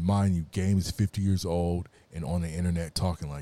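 normal talking voice

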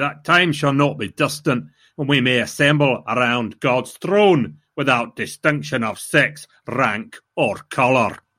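put-on spoken with Scottish accent. Quoting a line said by Munro, in Munro's Scottish accent. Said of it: "He was saying a Scottish accent".

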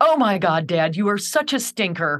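mock crying and laughing at once. Recalling sobbing while writing about their dad when the music switched; retelling laughing through tears. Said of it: "I started laughing through my tear".

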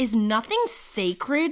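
mock, imitated bellowing voice. Recounting what a man said in a story, retelling a bellow. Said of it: "He bellows".

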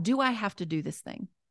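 ordinary delivery

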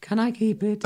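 put-on tiny, very high, soft little-girl voice. Trying the line again after being asked to redo it, in a little girl voice. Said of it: "it would be really hard to do a little girl".

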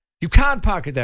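put-on Irish accent, loud. Retelling a man objecting to where he parked: tiny Irishman's voice. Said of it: "a tiny Irishman".

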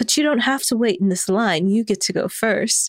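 put-on British accent. Retelling what an attendant said at a queue, doing the attendant's British accent, imitating a British accent. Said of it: "they were talking in British accents".

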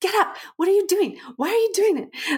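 alarmed protest.

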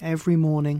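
ordinary delivery

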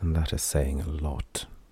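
softly spoken. The speaker adds a further remark to a companion, quieter voice. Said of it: "Lon added in a quieter voice".

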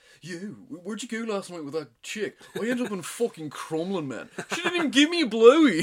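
mock-posh accent of young lads. Retelling what three lads said in a lecture hall, imitating a posh accent. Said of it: "like loads of posh lads".

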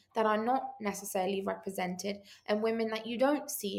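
normal talking voice

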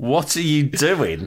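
put-on piss-taking tone. Retelling a mocking question asked in the hospital: imitating a piss-takey tone. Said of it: "in this sort of really piss-takey way".

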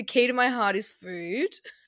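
ordinary delivery

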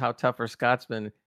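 ordinary talk

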